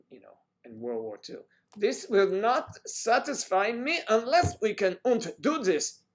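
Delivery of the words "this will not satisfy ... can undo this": very high, very loud, shrill, booming bad German accent. Talking to someone who moved from germany, the speaker uses a bad german accent. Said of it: "my German accent is based on Gestapo movies".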